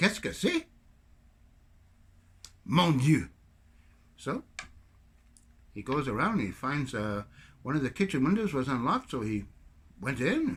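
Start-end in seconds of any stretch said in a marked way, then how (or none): 0.0-3.3 put-on French accent, swooping and sing-song. Telling a joke about a locked-out man: french accent. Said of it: "Sorry about the French accent".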